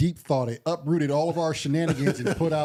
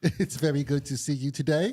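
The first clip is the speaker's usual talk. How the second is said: fake British robotic assistant voice. Imitating the AI Pi greeting Lamar: Pi's British voice. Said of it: "she's in that British voice".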